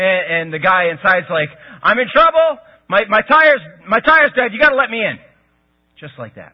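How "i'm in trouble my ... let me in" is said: pushy, forceful, urgent delivery with raised voice. Retelling a stranger demanding entry at the door: imitating a forceful, urgent demand. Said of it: "Really forceful, urgent".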